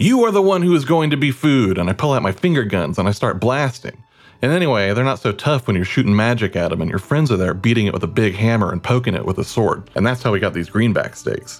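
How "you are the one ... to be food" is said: put-on, heated, angry, high-pitched. Retelling a fight story, quoting what he said back to a foe, retelling an angry threat. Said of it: "So then I'm getting angry".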